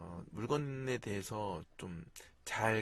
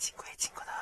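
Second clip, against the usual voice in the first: breathy, whispered put-on ant character voice. Reading a story to children, in a put-on ant voice. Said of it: "개미 목소리로".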